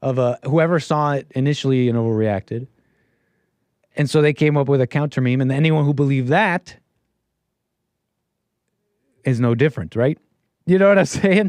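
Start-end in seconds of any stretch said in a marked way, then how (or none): 10.6-11.5 higher, louder, laughing voice. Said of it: "Sorry, I'm laughing at my chat".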